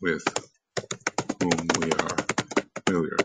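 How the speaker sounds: whom stressed, phrase broken by pauses.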